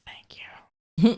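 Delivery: faint, breathy whispered line. Voicing a badly hurt character thanking a healer: whispering in character.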